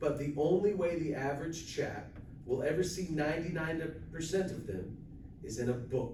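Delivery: ordinary talk, nothing marked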